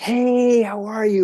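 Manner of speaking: really loud, shrill, very high, slowly stretched "hello". Recalling a woman coming out of the bathroom at the office, imitating a really loud greeting. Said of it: "Like really loud".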